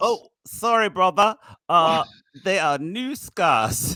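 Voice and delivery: put-on British accent. Playing out a phone call scene, the speaker answers in a British accent. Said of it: "picking up a call British or whatever accent".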